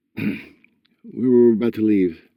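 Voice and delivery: tight voice holding back tears. Reading Brock's spoken line in a story, in a strained voice. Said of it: "he said in a strained voice".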